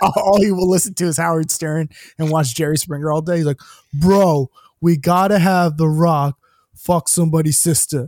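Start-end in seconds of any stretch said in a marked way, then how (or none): 3.9-8.1 put-on thick, heavily laid-on New York accent. Quoting a Mets-fan guy he describes, thick New York accent. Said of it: "he has the like thickest New York accent".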